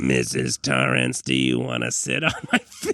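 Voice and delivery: robot-like voice in a smoker's throat. Continuing to imitate Tony: Tony voice, smoker with robot throat. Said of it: "I smoked for a million years and now I have a robot in my throat".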